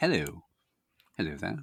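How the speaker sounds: proper-sounding posh voice. Discussing which accents make you sound smarter, demonstrating a posh accent. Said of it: "if you're like posh".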